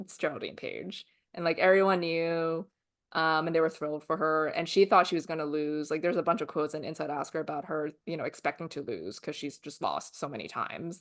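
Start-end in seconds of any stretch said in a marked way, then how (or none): 0.0-1.1 hushed whispered voice. Retelling what a nominee whispered in the audience: imitating Jessica Lange whispering.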